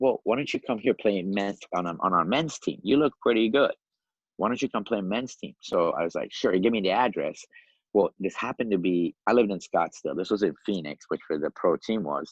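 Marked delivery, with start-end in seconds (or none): 0.0-5.5 put-on Yugoslavian accent, much higher pitch. Retelling how a man invited him to play on the men's team, Yugoslavian accent. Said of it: "with an accent".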